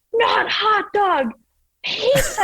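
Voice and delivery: put-on screaming, very high, very slow, drawn-out. Retelling a ski lesson, the speaker imitates their dad screaming instructions. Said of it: "And he's like screaming it".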